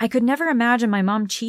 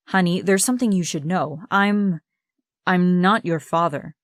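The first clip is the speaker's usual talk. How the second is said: usual speaking voice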